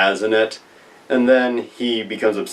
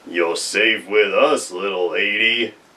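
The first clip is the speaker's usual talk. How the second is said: put-on cowboy voice. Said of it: "[name] goes in doing a John Wayne voice expression".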